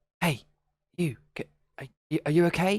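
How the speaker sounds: soft whispered voice. A player's character stepping toward someone drawing on the wall with juice: slightly hushed whisper. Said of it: "kind of slightly hushed and whispered".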